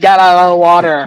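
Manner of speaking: plain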